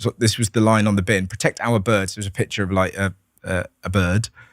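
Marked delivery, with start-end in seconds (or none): none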